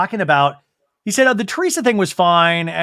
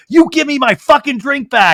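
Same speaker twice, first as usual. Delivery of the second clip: put-on drunken, high, unhinged yell; 8 semitones higher, 4 dB louder than usual. Retelling a drunk guest yelling at a producer over a drink: imitating someone yelling. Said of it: "yelled at the producer".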